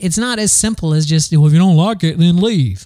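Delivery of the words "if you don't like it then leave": stock put-on Southern American accent. Speaker voices a hypothetical remark in a put-on Southern accent. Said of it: "Again, Southern accent".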